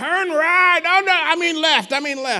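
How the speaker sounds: put-on very high, slow, drunken-sounding Irish accent. Retelling a downloaded GPS voice giving wrong directions, in a drunken Irish man voice. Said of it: "a drunken Irish man voice".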